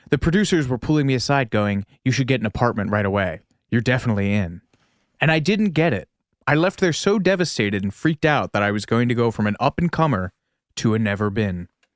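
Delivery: normal talking voice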